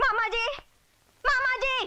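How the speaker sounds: shouting. In a quarrel, a character calls out for her uncle, shouting. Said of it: "इतना क्यों चिल्ला रही हो?".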